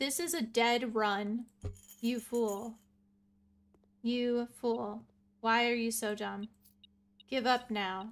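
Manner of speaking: mock sassy, defeatist attitude, slow, dismissive delivery. Predicting what another person is going to tell them, mock sassy. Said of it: "He's gonna be sassy".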